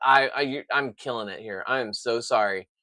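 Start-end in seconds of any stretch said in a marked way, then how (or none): none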